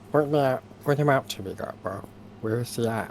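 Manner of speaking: very quiet, hushed, held-back voice. A player speaks as their character to another character, in a very quiet voice. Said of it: "In a very quiet voice".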